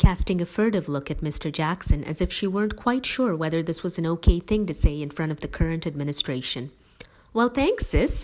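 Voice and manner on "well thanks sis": happily taken aback, pleasantly surprised, higher pitch. Thanking their sister for a compliment, pleasantly surprised. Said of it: "pleasantly surprised".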